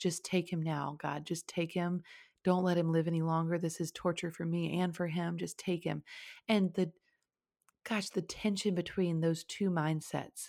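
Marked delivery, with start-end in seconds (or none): 0.0-6.0 mock-sobbing, begging voice. Recalling standing in the shower begging God: reenacting sobbing plea to God. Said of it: "like begging God to end this".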